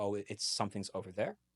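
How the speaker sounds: plain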